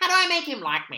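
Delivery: scornful, derisive voice, high-pitched and loud. Complaining about people who email for advice, the speaker does a mocking impression of them. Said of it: "That's my impression of people that email me".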